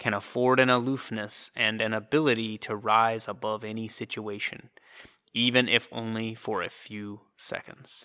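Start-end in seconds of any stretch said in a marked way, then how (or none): none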